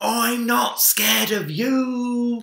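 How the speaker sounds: shrill, top-volume, very high, very slow yell. Minik, pretending to be a fearsome pirate, faces Big Bear, shouting at top volume. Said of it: "shouted in his loudest voice".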